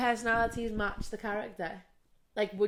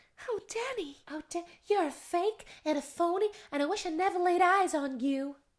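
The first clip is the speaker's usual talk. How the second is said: high, put-on American accent; 8 semitones higher than usual. Doing the outro, showing how a woman talks: imitating her American accent. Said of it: "She talks like this".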